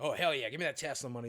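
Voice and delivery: fast, gushing, mock-enthusiastic sarcasm. Telling a story about finding a way to make money, the speaker says this in a sarcastic, mock-enthusiastic way. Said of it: "it's obviously sarcasm".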